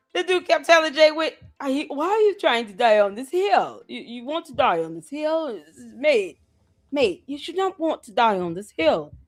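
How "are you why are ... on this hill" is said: put-on accent slipping between British and Australian. Retelling what a guy kept telling someone: imitating a guy's wavering British-Australian accent. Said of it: "he couldn't even keep his accent together".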